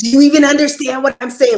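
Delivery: mock shrill, very high, very loud annoyed delivery. Retelling how an annoyed younger lady talked to the speaker; imitating an annoyed woman. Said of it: "this is how she's talking to me".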